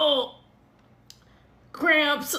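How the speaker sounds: fake, put-on groan of pain. Retelling faking period cramps to leave a date early; fake pained groan. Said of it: "hunched over in the middle of Calaveras being like".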